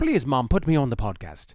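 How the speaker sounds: terrible put-on Irish accent, loud and swooping. Voicing your big orange cat, in a terrible Irish accent as Dan. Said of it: "my terrible Irish accent".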